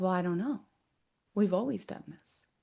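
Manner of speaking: put-on quiet voice. Recounting the answer an inner energy gave when questioned, imitating a quiet voice. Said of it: "the energy got really quiet".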